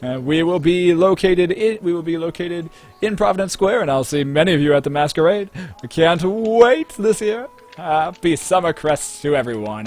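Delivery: very loud, showy, drawn-out announcer-style shout. A flamboyant character shouts an announcement to a passing crowd, inviting them to an event. shouting like a showman announcer. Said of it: "he shouts and he shouts out".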